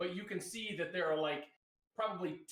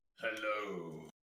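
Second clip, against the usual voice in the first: deep, rumbly voice, very low; 9 semitones lower than usual. A game narrator voices an unseen figure answering a call in a corridor, deep rumbly voice. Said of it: "You hear in a deep, rumbly voice".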